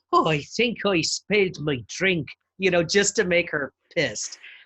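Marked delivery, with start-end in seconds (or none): 0.1-2.2 slow, teasing, exaggerated fake Irish accent. Teasing a woman who hates americans doing that irish accent: stereotypical irish accent. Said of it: "I would always tease her and be like".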